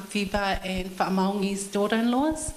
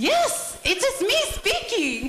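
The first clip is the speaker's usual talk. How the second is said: very high, very slow, swooping, annoyed voice; 14 semitones higher, 3 dB louder than usual. Retelling a conversation, imitating the woman's high-pitched voice as she grows annoyed. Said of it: "Fever with her high-pitched voice".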